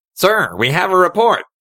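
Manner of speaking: very high soldier voice through one pinched nostril. Showing a requested example of the voice, one nostril held: stormtrooper voice. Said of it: "try my best at sounding like a stormtrooper".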